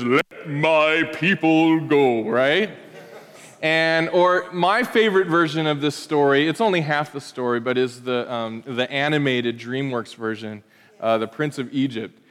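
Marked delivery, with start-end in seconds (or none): 0.0-2.2 very slow, drawn-out, every word stretched. Quoting a famous film line during a sermon: Charlton Heston voice. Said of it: "in his very Charlton Heston way says".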